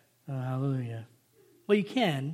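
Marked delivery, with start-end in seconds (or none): 0.3-1.1 low, flat, deadpan sarcastic monotone. Showing how not to say hallelujah in prayer: flat sarcastic monotone. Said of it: "you can't just say hallelujah like monotone ... That's more sarcastic".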